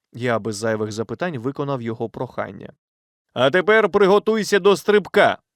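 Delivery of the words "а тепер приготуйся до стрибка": loud, high-pitched, urgent yelled shout. Reading a companion's order before he pulls the narrator after him, shouting. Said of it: "крикнув Вольтер".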